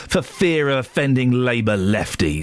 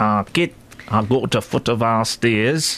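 put-on sulky, mardy Manchester accent. Imitating a man who speaks funny, in a mardy manchester accent. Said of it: "He's got a mardy Manchester accent".

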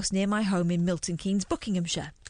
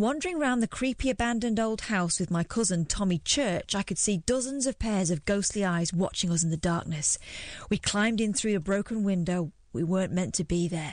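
ordinary talk, nothing marked

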